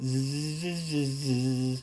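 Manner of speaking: buzzing zzz vocal warm-up sounds. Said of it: "you'll feel like an idiot going".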